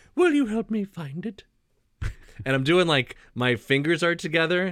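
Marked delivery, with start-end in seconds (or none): 0.2-1.5 put-on high, old grandmotherly bear voice. Trying out a new voice, doing Winnie the Pooh's grandma. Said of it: "you sound like Winnie the Pooh's grandma".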